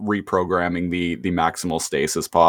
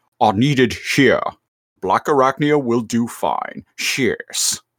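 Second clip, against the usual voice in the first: sudden high-pitched interjection; 5 semitones higher than usual. Retelling Megatron cutting someone off in the cartoon: Megatron impression. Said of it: "Megatron cuts him off and is like".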